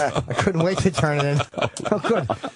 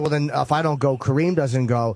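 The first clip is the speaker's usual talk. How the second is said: ordinary talk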